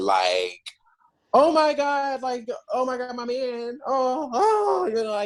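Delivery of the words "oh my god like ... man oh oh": very high, very slow, staged, put-on anguish. Showing a listener the distress she needs from them, mock distress. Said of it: "I need you to be in distress".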